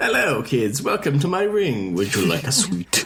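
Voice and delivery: big-screen supervillain voice, swooping comic-book style. Acting out the band's ringmaster as a villain greeting kids: Marvel villain voice. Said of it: "He sounds like a Marvel villain".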